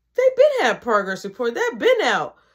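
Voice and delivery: normal talking voice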